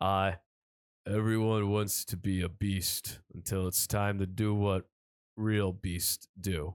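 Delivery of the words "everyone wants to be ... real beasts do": terrible, very low, deep, drawn-out voice. Reading a quote from a movie script for others to guess: terrible Vin Diesel voice. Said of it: "my terrible Vin Diesel voice".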